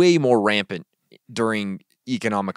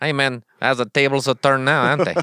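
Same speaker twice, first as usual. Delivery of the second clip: improvised fake Mexican accent; 4 semitones higher than usual. Doing a bit after being asked how to do the accent, Mexican accent. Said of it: "How the heck do I do a Mexican accent?".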